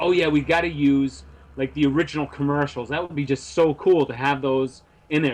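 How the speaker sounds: plain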